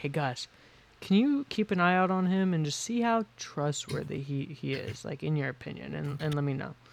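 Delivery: whispered aside. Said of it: "I'll whisper to him and be like".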